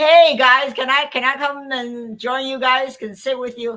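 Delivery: loud booming voice, pitched high. Act out football player Mike Henry asking to join your group, in a booming Mike Henry voice. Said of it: "this booming voice".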